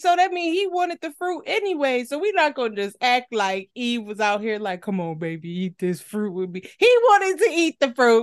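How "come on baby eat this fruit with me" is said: deep, low put-on voice. Acting out Eve coaxing him to eat the fruit: deep voice as Eve. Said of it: "Not that Eve had a deep voice like that".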